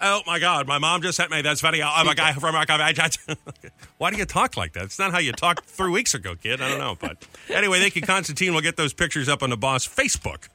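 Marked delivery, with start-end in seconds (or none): 0.0-1.9 put-on teenage Valley Girl voice. Imitating a soon-to-be twelve-year-old calling from school, in a valley girl voice. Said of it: "Sounds like Valley Girl".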